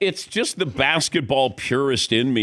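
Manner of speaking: plain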